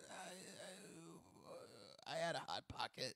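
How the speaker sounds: whispered, hesitating on each "I". Acting as the president in a comedy bit: Joe Biden impression. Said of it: "is that your impression of Biden?".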